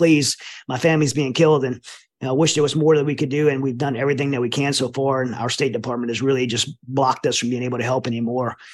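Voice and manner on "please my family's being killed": imitated desperate, begging tone. Retelling voice clips of people begging for help: imitating someone begging. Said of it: "voice clips begging".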